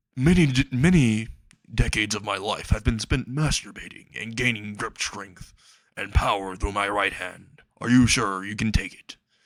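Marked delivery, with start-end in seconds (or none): none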